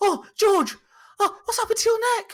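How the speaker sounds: high, loud, overly concerned, fretful fussing voice.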